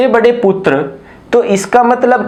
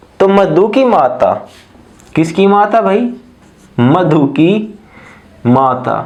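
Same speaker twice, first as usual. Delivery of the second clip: deliberate, very slow, drawn-out, word-by-word delivery; 3 semitones lower than usual. Explaining a tricky reasoning question to an audience, speaking very slowly. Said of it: "मैं इतने धीरे धीरे बोल रहा".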